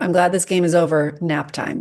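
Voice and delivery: ordinary talk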